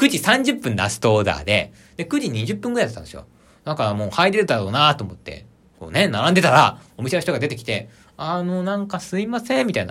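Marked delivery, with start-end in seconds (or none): 8.0-9.7 mock calm, gentle, unhurried hesitation, slow and high. Retelling what shop staff said at closing, imitating a very calm manner. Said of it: "すごい穏やかな感じね".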